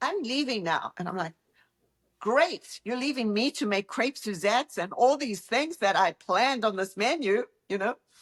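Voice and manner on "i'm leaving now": put-on strong, very British accent, pitched up. Retelling what a British woman said as she walked out, in a very British accent. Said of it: "She's a very British accent".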